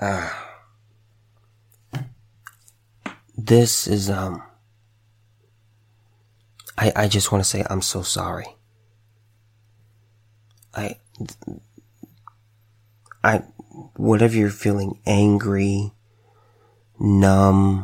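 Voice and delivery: holding back tears. Offering condolences to parents who lost their son, holding back tears. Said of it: "I'm really trying my best not to cry".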